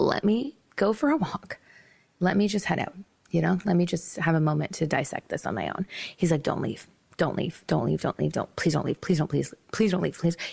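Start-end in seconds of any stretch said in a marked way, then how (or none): 6.4-10.4 put-on, fast, frantic, desperate begging, words tumbling out. Retelling how a man begged you not to leave, mock frantic pleading. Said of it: "He starts freaking the fuck out".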